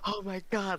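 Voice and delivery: mock, very high, flustered, panicked exclamation. Retelling a streamer caught watching another stream: imitating someone panicking.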